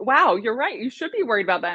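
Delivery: mock sarcastic tone. Retelling what the speaker says to people who claim to be unicorns: retelling own sarcastic remark. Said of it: "sometimes I'll be sarcastic".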